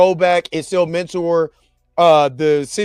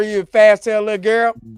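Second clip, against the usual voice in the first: put-on grandmother voice, higher pitch; 3 semitones higher than usual. Retelling what a grandmother would say: imitating grandma scolding. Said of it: "my grandma would ever".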